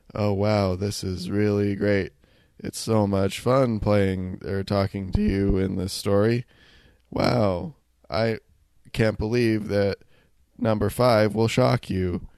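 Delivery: wooden, flat, read-off-a-script delivery. Complaining about bad game voice acting, the speaker shows someone reading off a script. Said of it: "someone reading off a script like this".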